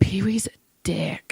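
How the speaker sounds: quiet mutter under breath. Retelling what a small child said in the car: imitating muttering under breath. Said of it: "under his breath".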